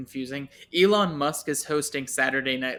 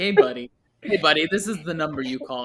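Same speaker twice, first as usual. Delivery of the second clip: put-on patronizing, chummy, talking down as to a child; 2 semitones higher, 3 dB louder than usual. Retelling what the man who calls them buddy said: imitating the IRS man. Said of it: "He's like".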